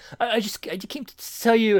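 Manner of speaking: put-on stuttering mumble. Retelling a comic scene where Superboy Prime meets Superboy: imitating stuttering mumbling. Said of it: "he starts stuttering and he's, he's, like, mumbling".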